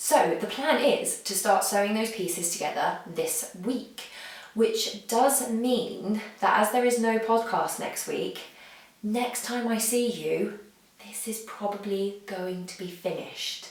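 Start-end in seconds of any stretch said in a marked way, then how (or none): 9.0-13.7 hushed, secretive half-whispered murmur. Telling listeners a blanket will probably be finished next time: half-whispering. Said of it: "And I whisper that".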